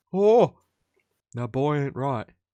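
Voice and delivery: bad, poorly done Texan drawl. After saying he has watched a lot of a show, doing a Hank Hill voice. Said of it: "I have to start Hank Hill by going".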